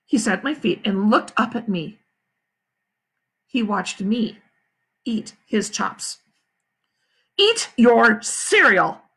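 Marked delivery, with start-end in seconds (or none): 7.3-8.9 mad, loud yelling. Reading a story aloud, voice the father yelling at Fudge. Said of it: "my father yelled".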